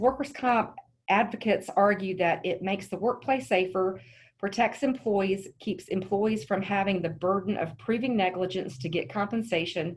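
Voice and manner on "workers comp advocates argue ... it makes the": ordinary delivery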